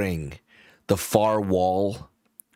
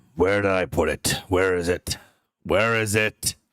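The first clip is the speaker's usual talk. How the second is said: deep, stoic character voice. Narrator voicing Wild Oak as the players approach; deep, stoic Wild Oak voice. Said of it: "in a very deep, stoic voice".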